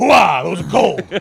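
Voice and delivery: loud, rough, barked-out voice. Acting out Al Pacino tasting frozen cookies: Al Pacino impression. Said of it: "Al Pacino putting Thin Mints in a freezer".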